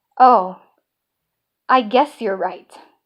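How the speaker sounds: very slow, dragging, puzzled, reluctant voice. Retelling an argument with their mother, the speaker imitates her very slow voice. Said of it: "in this very slow voice".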